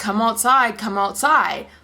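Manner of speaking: usual speaking voice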